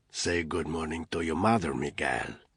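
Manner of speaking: rasping, hoarse, barely-there half-whisper. A man speaks to Miguel in front of Anna, in a hoarse near-half-whisper. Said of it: "he said in a hoarse voice that was not much more than a whisper".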